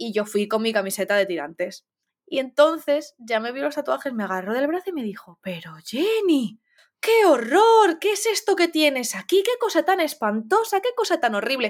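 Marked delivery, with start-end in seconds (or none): 5.4-11.7 comically appalled, high, horrified exclamations. Retelling how a woman reacted on seeing the speaker's tattoos, imitating her hilarious tone. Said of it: "te lo dice en un tono que te descojonas".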